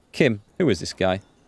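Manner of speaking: ordinary delivery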